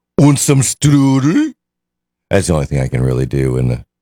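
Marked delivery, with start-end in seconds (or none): 0.2-1.6 very high, put-on Swedish, Scandinavian accent. Echoing the other speaker's strudel offer, in a swedish or danish accent. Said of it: "Swedish accent? Danish?".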